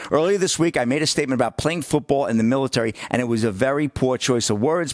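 usual speaking voice

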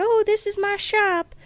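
really high-pitched, slow shopkeeper voice. Retelling the convenience store man's greeting, in a high-pitched shopkeeper voice. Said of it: "he has a really high-pitched voice".

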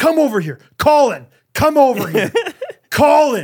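mock very high, scolding yell. Recounting how one of the dads yelled at a kid without shoes: imitating a dad yelling. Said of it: "one of the dads was like yelling at him".

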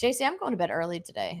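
soft, weary, worn-out, tired tone. Speaking to a co-host during a show segment, tired. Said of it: "you sound tired".

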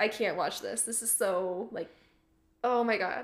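normal talking voice

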